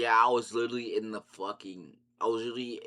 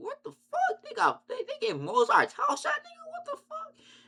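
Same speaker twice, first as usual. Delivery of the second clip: acted very high disbelieving scream, climbing and swooping. Retelling hearing a surprise announcement in a crowded bathroom: retelling own screaming. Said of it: "I started screaming in the bathroom".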